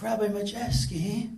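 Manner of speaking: put-on soft English accent. Quoting a man who addressed the speaker by name, English accent. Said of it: "he rather had a, an English accent".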